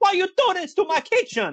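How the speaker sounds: put-on high sing-song Italian accent. Imagining a chef walking in on the mess: stereotypical Italian chef voice. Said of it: "a stereotypical, like, Italian chef pops in".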